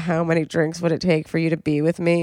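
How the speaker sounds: normal talking voice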